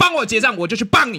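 fierce, harsh tone. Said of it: "你那么凶哦".

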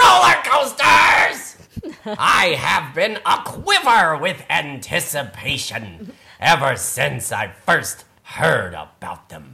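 hammy, goofy, swooping pigeon voice. Reading the pigeon's lines aloud from a picture book: Gilbert Gottfried voice. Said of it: "Gilbert Gottfried".

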